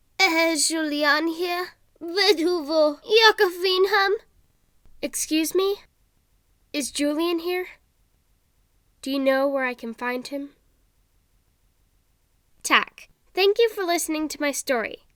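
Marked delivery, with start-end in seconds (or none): 0.2-10.5 put-on squeaky, high elderly woman's voice. Telling a Halloween ghost story, voicing the old woman people hear: squeaky old woman's voice. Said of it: "an old woman's squeaky voice".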